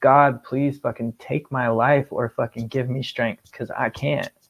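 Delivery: acted-out, tearful, sobbing crying voice. Telling of a breaking point, the speaker acts out their past words: retelling a sobbing plea. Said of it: "started bawling my eyes out, and I said".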